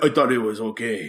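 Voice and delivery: poor put-on Russian accent. Pretending to be Russian athletes caught doping: bad Russian accent. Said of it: "That's a bad Russian impersonation".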